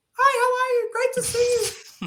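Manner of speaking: sudden shift to a very high, altered voice. Retelling greeting someone the day your voice suddenly changed, imitating your altered voice. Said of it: "my voice is, you know".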